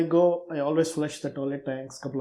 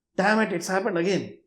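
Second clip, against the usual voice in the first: mild, restrained shout, pitched up; 5 semitones higher than usual. Retelling what a lady shouted on finding the flooded floor: imitating someone shouting. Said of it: "she shouts".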